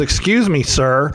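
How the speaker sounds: play-acted, very angry, irate voice. Retelling how a woman behind him confronted him, imitating an angry 'Excuse me, sir'. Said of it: "she was right in my ear".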